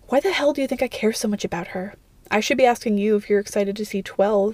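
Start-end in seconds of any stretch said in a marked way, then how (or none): none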